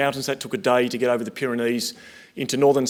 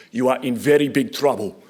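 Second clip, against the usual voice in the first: put-on thick Russian accent. Retelling what a police chief in Belarus told him, thick Russian accent. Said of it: "in his thick Russian, Belarusian accent".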